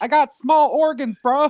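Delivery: very high, loud, slow, drawn-out bro voice. Imagining a child speaking with someone else's voice: imitating Tyree's voice. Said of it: "it's Tyree's voice comes right out of her".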